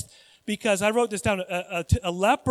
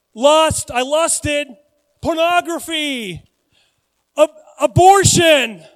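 loud high-pitched yelling. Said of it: "what if I had to walk around and just say".

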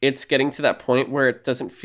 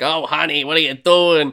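loud, raised, strange robot voice; 3 semitones higher, 6 dB louder than usual. Retelling a line from an animated show's little robot: Nigel's weird voice. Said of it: "So he has all these weird voices where he's like".

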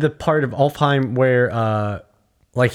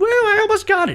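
put-on childlike voice, pitched higher. Acting out a game line as Atreus: imitating Atreus. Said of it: "realistic, childlike emotions".

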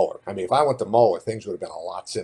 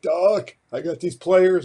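very high, raspy, loud raised voice; 10 semitones higher, 5 dB louder than usual. Retelling Saturday morning phone calls about football players: raspy Gerry Faust voice. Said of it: "Jerry on the phone with that raspy voice going".

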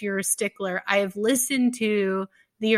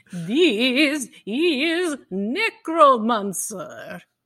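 poor put-on vampire count accent; 3 semitones higher than usual. Opening a podcast episode, introducing the show, in a poor Bela Lugosi Dracula accent. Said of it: "a very poor attempt at a Bela Lugosi Dracula accent".

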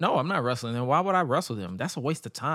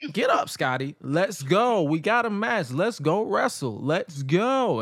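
put-on motherly scolding yell, hurrying tone; 4 semitones higher than usual. Retelling a wrestler yelling at another to get up off the floor: imitating Tommy Dreamer yelling. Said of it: "He just started yelling at him".

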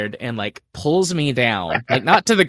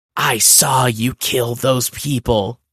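stage whisper, loud and slow. Retelling what Barbara said to the speaker: Barbara's loud whisper, retold. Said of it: "she whispers, but she has that like really loud whisper thing".

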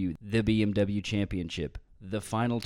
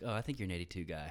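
put-on deadpan delivery, much quieter; 2 semitones lower, 11 dB quieter than usual. Retelling Tim's reply when asked about his playing, imitating Tim's deadpan. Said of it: "Tim is kind of deadpan".

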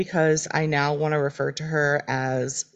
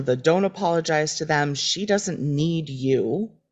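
normal talking voice

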